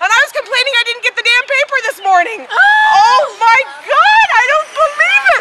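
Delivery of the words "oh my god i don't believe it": thrilled, excited disbelief, pitched up. Speaker finds patio furniture and a table, so excited. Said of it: "I am so excited!".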